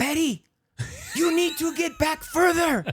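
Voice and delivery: put-on, very high, loud screaming. Retelling what a coach said during a game: imitating coach screaming. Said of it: "he starts screaming at me".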